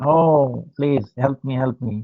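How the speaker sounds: acted desperate crying out. Retelling Radhika hanging from a branch: Radhika crying for help. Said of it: "so she's crying".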